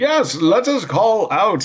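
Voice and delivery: very high, loud, echoey, reverberating voice. A character answers a player asking whether to call out, in an echoing voice. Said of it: "he says in a echoing voice".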